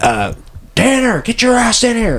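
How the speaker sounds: very high, drawn-out hollered yell. Recounting a scene where Fletcher calls for Tanner, retelling Fletcher's yell. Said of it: "Fletcher yells".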